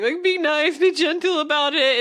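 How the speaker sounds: high, tearful voice breaking through sobs. Telling of a girl down on her hands and knees, the speaker imitates her crying. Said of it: "is like crying".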